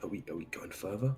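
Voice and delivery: very quiet, hushed half-whisper. Playing a character, asking the others whether to go further: half-whispering. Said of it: "And I whisper".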